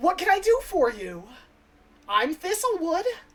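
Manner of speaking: high, loud fairy shopkeeper voice calling out.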